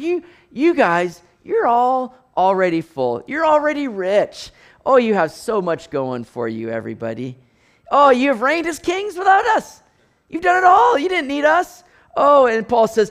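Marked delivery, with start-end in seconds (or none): 0.0-11.8 put-on, gently teasing, sanctified, swooping, sing-song sarcasm. Reading a letter aloud to a congregation, voicing Paul: sarcastic, as Paul. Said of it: "he's writing with a little bit of sanctified sarcasm".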